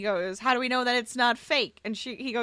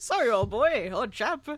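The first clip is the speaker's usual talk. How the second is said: put-on, mock English accent. Riffing on how a character's line was delivered, english accent. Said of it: "I don't know why I went English".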